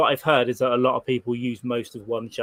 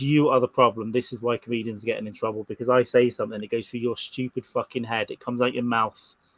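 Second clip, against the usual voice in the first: usual speaking voice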